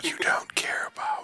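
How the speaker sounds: eerie whispering. Whispering a card aloud to sound creepy: creepy whisper. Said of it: "I'm gonna whisper one of these cards".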